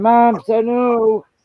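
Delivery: high, loud, slow mock scream. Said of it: "and I'm gonna scream".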